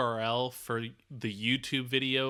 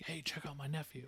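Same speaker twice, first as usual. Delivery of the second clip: hushed, very quiet whisper right in the ear; 11 dB quieter than usual. Picturing an uncle slipping a tip to a player: imitating someone whispering. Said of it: "kinda whispers in his ear".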